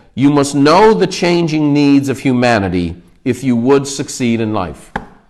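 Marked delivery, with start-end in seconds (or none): none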